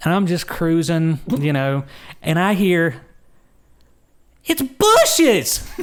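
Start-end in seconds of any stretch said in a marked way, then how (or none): 4.4-5.6 put-on very high, cartoonish, childlike, squealing voice. Retelling hearing her call out while driving in the turn lane; cartoon-esque kid voice. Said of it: "In her cartoon-esque".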